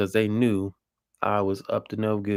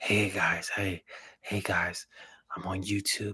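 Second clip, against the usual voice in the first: hushed, quiet whisper; 7 dB quieter than usual. Alone in the den, re-enacting how they began the video, imitating own whisper. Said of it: "I know I started out whispering".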